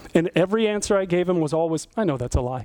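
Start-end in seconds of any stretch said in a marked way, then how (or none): 2.0-2.6 put-on calm voice, lower. Retelling how an accuser kept calling him a liar: imitating a calm accusation. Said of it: "he said it so calmly".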